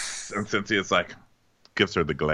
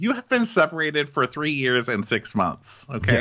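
ordinary talk, nothing marked

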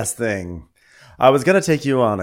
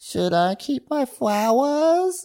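put-on baby talk, very high and slow. Retelling what a woman said after a man gave her flowers, in put-on baby voice. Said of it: "she's also switched over to baby voice".

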